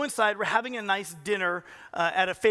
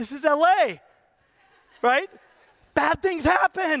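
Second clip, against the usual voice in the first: high, drawn-out, alarmed, panicked pleading; 8 semitones higher, 6 dB louder than usual. Retelling how a partner reacted to a missing car: imitating someone panicking. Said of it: "she's panicking".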